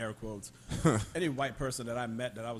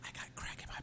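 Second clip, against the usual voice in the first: put-on whisper, quieter. Acting out a funny imagined moment when the siren went off: imitating a whisper. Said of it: "and then he whispered".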